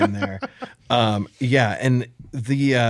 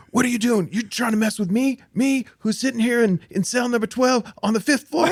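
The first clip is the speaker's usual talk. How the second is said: panicked scream, pitched higher; 12 semitones higher than usual. Retelling a film scene where the character yells for security: imitating Eddie Murphy screaming. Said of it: "screaming, you know, for the security".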